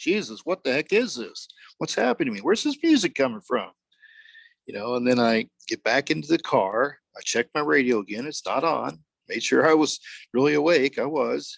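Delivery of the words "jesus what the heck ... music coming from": play-acted bewildered, confused half-shouting, pitched high. Retelling getting out of the car confused, retelling a shout. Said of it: "I'm pretty much shouting".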